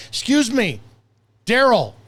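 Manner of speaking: put-on irritated voice. Acting out a complaint to a barista about a wrong order: imitating being irritated. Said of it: "irritated and say".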